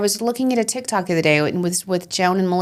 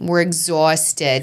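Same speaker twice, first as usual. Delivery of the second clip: put-on Long Island New York accent; 3 semitones lower than usual. Joking about how the team gets everywhere: Long Island accent. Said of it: "Your Long Island accent is getting good".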